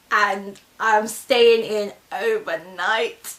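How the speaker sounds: slow, tearful laughing while crying.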